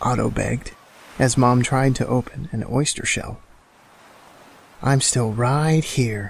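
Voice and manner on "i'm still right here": sighed, with a sigh. Mom answers Otto, who won't let go of her; sighed. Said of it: "Mom sighed".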